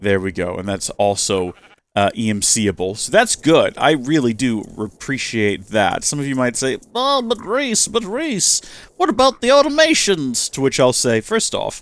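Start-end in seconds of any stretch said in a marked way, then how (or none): 6.9-10.5 very high, vintage cartoon character voice. Speaker voices what some listeners might ask them, old-school cartoon character voice. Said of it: "You sound like an old school cartoon character".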